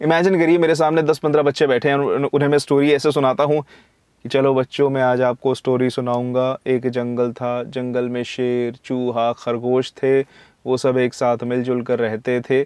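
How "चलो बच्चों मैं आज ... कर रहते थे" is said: dull, flat, slow, lifeless delivery with no feeling. Telling children a jungle story the boring way: flat, no energy or feeling. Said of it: "इसमें कोई भी बिल्कुल भी energy नहीं, कोई feeling नहीं".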